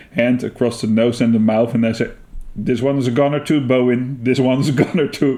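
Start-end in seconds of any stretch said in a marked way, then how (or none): none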